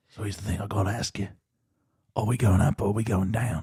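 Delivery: gravelly, rough British-accented voice. After joking that it requires some warm up, you do a Jason Statham voice, British and gravelly. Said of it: "when you combine the British and the gravel".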